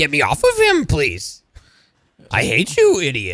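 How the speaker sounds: put-on little alien voice. Retelling an earlier bit with a Yoda shirt: Yoda voice. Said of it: "it's a perfect Yoda".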